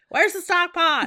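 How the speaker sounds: shrieking, shrill shout, very high and loud. Retelling how the other person called out from the pantry: imitating someone yelling. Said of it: "the person yells out".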